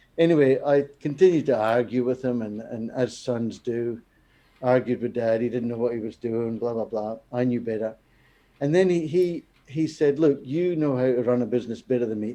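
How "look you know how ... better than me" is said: mocking, sarcastic jab. Retelling a father's remark during an argument, imitating dad's sarcastic tone. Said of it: "in a sarcastic way".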